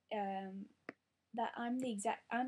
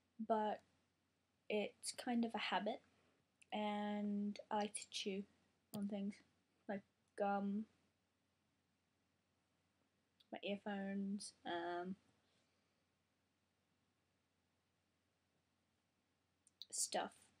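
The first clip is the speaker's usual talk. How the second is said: chewing sounds while speaking. Apologizing to viewers, the speaker talks while chewing. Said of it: "very sorry about the chewing".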